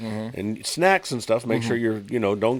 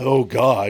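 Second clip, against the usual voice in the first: grumbling voice; 2 semitones higher, 7 dB louder than usual. Retelling how the other speaker started off, imitating someone complaining. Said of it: "you sounded like you were complaining".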